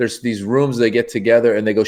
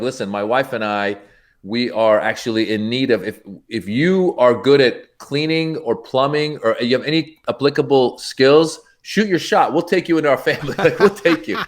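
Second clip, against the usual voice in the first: normal talking voice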